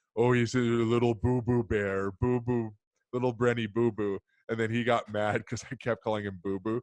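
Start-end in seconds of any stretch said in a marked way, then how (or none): 0.2-4.2 mock-doting, teasing babyish baby talk. Retelling making fun of sisters who babied him: imitating own mocking baby talk. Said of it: "to make fun of them and saying".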